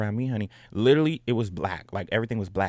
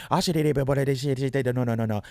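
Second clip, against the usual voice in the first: mock panic, higher pitch, slower pace; 3 semitones higher than usual. Retelling a friend's reaction when the speaker couldn't move, imitating a friend freaking out. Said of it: "she's freaking the fuck out".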